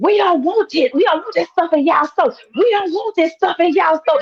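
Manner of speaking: high-pitched angry outburst, ranting, flying off the handle. Retelling what the girl said about the store: imitating someone flying off the handle. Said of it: "flying off the handle".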